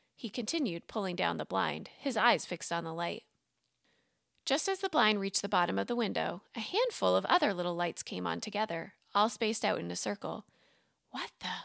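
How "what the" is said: hushed, soft, startled half-whisper under the breath. Seeing a circle of little lights appear at the window, half-whispered. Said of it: "Max whispered".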